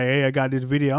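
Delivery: ordinary talk, nothing marked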